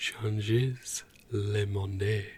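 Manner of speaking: over-the-top, laid-on French accent. Repeating a phrase so that it sounds super French, exaggerated French accent. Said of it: "if I say it like that, it sounds super French".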